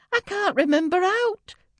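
very high, terrified, frightened shouting cry. A frightened girl in pain answers the nun's gentle encouragement; frightened shout. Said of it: "the frightened girl shouted".

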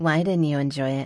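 ordinary delivery

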